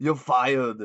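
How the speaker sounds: rough, unpolished, amateur put-on celebrity voice. Giving another example of doing actors from movies: Arnold Schwarzenegger impression. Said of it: "or with Arnold Schwarzenegger".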